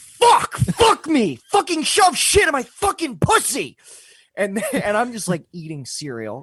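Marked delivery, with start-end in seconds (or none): 0.0-3.8 mock male scream, much higher, louder. Telling a story about a man who yelled from his room, retelling his screaming. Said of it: "He would scream at his boss".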